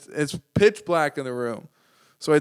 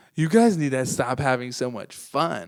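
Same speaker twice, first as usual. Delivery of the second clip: mock joking, playful tone. Retelling a girl who came up while they were laughing: mock joking tone. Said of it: "she said it like it was a joke".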